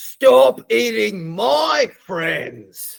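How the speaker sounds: full high-pitched battle-cry shout. A player voicing their character right after slicing into the monster, yelling. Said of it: "And I yell".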